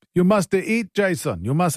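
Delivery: clumsy, failed put-on Greek accent. Speaker quotes his friend George's dad at his house after school, bad attempted Greek accent. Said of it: "that's not a Greek accent, by the way. I'm horrible".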